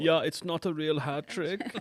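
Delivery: put-on German-accented English. Talking about German football commentators, mimicking them: put-on German accent. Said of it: "Your German accent".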